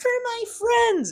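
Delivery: very high, tearful, sobbing voice. Mocking a hero who always cries for his friends: imitating Deku crying. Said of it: "always crying".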